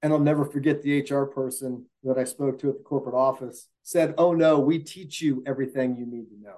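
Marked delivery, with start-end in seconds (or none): 4.2-6.6 utterly condescending, patronizing tone. Speaker quotes the HR person at the corporate office in a mock-condescending tone. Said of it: "in the most condescending tone".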